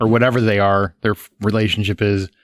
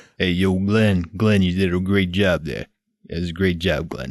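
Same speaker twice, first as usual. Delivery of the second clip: put-on Italian-American tough-guy voice, lower; 3 semitones lower, 3 dB quieter than usual. Congratulating a guest on a great job, doing a Stallone impression. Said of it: "[name] does a stellar Stallone impression".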